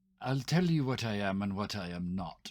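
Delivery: grand put-on British accent. Speaking in character, about to introduce oneself: fake british accent. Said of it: "switches to a fake British accent".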